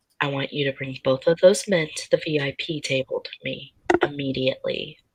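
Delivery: quiet whisper. Whispering an order to a security guard while pointing: whispering to a security guard. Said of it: "I'm gonna whisper to him".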